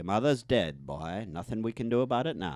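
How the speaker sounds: accent from Maine. Asked how people in Maine talk, the speaker demonstrates: Maine accent. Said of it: "how do they talk?".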